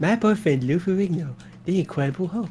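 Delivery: flamboyant camp delivery. Asked why he made him sound camp, the speaker repeats the line in a camp voice. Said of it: "I'm saying it like that".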